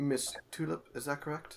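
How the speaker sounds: courteous, formal butler delivery. He reads a name from a note to the one he visits; very proper. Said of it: "very proper as he stands before you".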